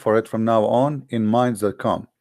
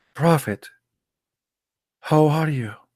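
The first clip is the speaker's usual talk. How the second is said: soft, subdued, humble, lowered voice; 4 semitones higher than usual. Teaching how one must address the prophet, demonstrating a lowered, subdued voice. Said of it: "You have to speak like this".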